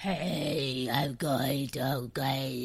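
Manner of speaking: attempted demonic voice. Trying out a voice for the others, attempted demonic voice. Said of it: "I was trying to do a demonic voice".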